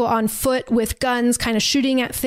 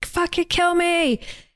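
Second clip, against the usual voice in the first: high-pitched, screamed-out cry; 7 semitones higher than usual. Retelling a scene where a man screams as something approaches: retelling a scream. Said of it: "he's screaming like".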